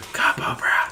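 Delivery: relishing the words. Repeating a phrase when asked to say it again, making it sound so good. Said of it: "say it again".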